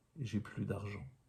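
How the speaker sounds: plain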